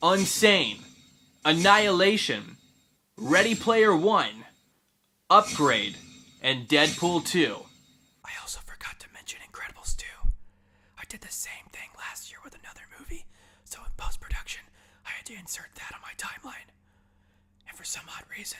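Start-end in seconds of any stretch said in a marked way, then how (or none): 8.2-18.6 whisper, higher and quieter. Adding a forgotten film to a list of favourites: whispering. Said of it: "I'm whispering again".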